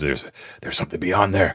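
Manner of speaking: muttered under the breath. Voicing a character hastily pulling a fallen man back: muttering under his breath. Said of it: "you can hear Barrios underneath his breath".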